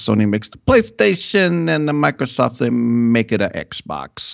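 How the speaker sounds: Italian barber's accent. Explaining the game consoles, slipping into an italian barber's accent. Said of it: "now I sound like my Italian barber".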